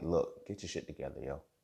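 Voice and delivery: serious, firm, no-nonsense fatherly tone. Retelling switching to guidance with a homegirl: imitating own fatherly tone. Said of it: "some paternal type shit".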